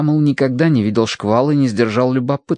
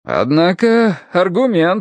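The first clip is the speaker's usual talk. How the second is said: glad, eager, delighted tone, pitched up; 6 semitones higher than usual. Reading a story, one man responds to another's explanation: gladly exclaiming. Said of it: "обрадованно воскликнул".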